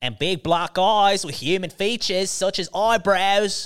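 put-on Australian accent, laid on thick. Showing how the line would sound in an Australian accent. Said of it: "if it was Australian, it would sound like".

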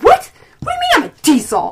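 play-acted indignant, high, swooping offended outburst. Retelling someone's reaction to being called a Diesel, acting out getting real mad. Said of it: "he gets real mad".

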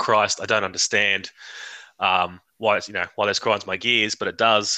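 ordinary talk

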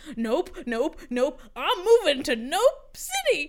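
trembling, fear-stricken, shaky, rising yell. Narrating a story, a frightened waitress runs off and yells from the distance: shaky, fear-stricken yell. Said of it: "her shaky, fear-stricken voice yell out".

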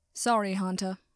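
ordinary delivery

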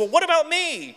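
very high, squeaky little voice. Retelling a book scene where Piglet gets upset and speaks up: squeaky little Piglet voice. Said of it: "in his squeaky little voice".

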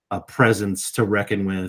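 usual speaking voice

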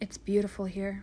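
hushed whisper. Reading a story, a woman sits by a waterfall with her dog, whispered. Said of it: "she whispered".

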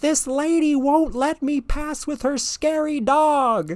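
very high yell, "dog" drawn out. Retelling a woman on a scooter complaining about a lady walking her dog, retelling someone yelling. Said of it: "Like yelling at nobody".

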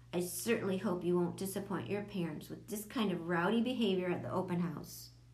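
usual speaking voice

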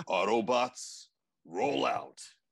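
robotic, rousing leader voice. After someone praises Optimus for his voice, another speaker chimes in: Optimus Prime impression. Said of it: "That's a good prime voice".

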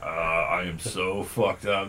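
put-on low, slow stoned voice. Retelling a joke where passengers hear the pilot: imitating a pilot announcing. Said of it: "all of a sudden you hear the pilot go".

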